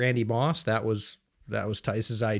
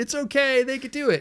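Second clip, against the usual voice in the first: mock sarcastic, joking voice, pitched higher. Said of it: "Completely jokingly".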